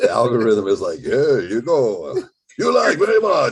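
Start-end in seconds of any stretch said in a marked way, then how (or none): 1.0-3.5 fake mixed foreign accent, higher and louder. Imitating the algorithm talking: put-on Eastern European Mexican accent. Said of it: "Eastern European slash, um, Mexican accent".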